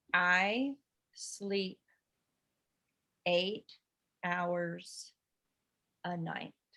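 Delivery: extremely slow reading. In a reading exercise, the line is read once more, even slower. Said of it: "read that even slower".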